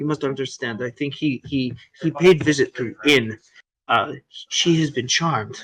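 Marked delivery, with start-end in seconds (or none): 4.5-5.6 low, hushed, secretive, confiding half-whisper. In a tabletop game, the game master voices Ishmark: Ishmark half-whispering. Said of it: "He's like whispering this".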